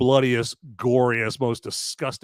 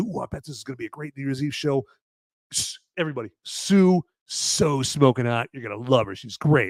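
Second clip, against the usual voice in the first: put-on keyed-up, gushing, eager, excited chatter. Retelling a film scene before a New Year's Eve show: imitating excited Dennis Quaid. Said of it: "he's all excited".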